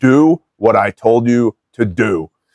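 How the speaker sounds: put-on slow, stern, forceful, no-nonsense voice. Retelling a father's final order: imitating a stern, forceful command. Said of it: "it's been stern and forceful".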